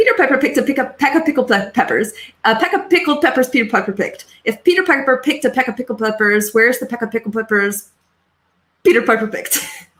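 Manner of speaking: fast rattling delivery, stumbling slightly. Asked to repeat the tongue twister faster, the speaker gives a fast tongue-twister delivery. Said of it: "Say it a little bit faster for me".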